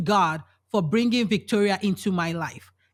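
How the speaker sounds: ordinary delivery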